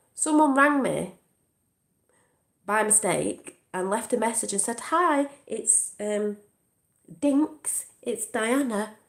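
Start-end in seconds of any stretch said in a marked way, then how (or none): 4.8-8.9 slow, upper-class voice. Retelling a voicemail a caller left by mistake, posh Princess Diana voice. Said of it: "posh voice that sounded like Princess Diana".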